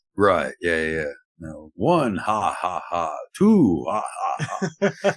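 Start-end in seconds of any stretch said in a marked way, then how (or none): 1.8-5.2 slow, swooping vampire voice, drawn out, then laughing. Answering talk about vampires by counting: Sesame Street counting vampire voice. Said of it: "Sesame Street shit".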